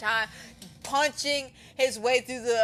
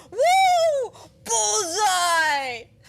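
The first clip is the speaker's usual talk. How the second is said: thrilled cheer, loud, high, long drawn-out woo; 11 semitones higher, 6 dB louder than usual. Retelling a movie scene where a character hits a shot: imitating an excited cheer. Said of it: "he's so excited about that".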